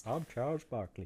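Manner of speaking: soft, badly done attempt at a voice. Doing a bad Charles Barkley impression for another speaker. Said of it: "That's a bad impression".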